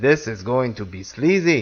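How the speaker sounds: put-on Arabic accent. On the podcast, quote Fulci in a put-on Arabic accent. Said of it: "Fulci's not an Arabian".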